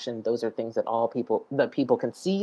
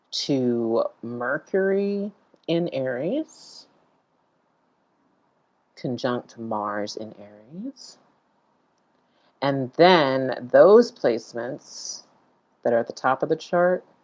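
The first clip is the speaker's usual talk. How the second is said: unhurried, slow speech; 4 dB louder than usual. Walking viewers through the placements on a chart, talking slowly. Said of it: "I'm just talking slow".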